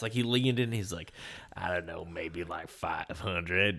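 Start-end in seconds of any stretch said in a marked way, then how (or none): 1.5-3.8 put-on eager, excited dirty old man voice. Retelling a father asked what his daughter is worth: imitating an excited dirty old man. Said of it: "He said it like a dirty old man too".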